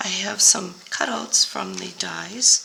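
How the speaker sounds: slow, whispery voice cracking and giving out. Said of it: "my voice keeps going out".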